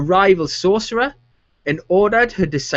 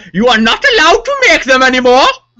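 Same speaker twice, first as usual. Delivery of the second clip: loud, slight put-on German accent; 5 semitones higher, 8 dB louder than usual. Mocking how Brussels would say it, trying to sound a bit German. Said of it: "I was trying to sound a bit German there".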